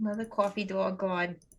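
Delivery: put-on, born-and-bred classic New York accent. Trying out a character's classic New York accent. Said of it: "his classic New York accent".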